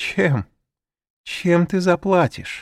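derisive, mocking, taunting, very high-pitched. Narrator voices a woman answering the narrator's offer to pay, mocking. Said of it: "Она взглянула с насмешкой".

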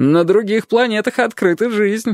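shrill mocking shout, very high-pitched. One of two young men in a queue shouts mockingly at a passing janitor. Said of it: "насмешливо крикнул".

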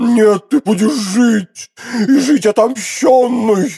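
high exclaiming cry, "жить" drawn out. Narrator reading a man refusing a woman's plea to die, exclaiming. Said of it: "воскликнул Фельтон".

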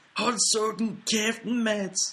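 high-pitched, drawn-out put-on shouted voice.

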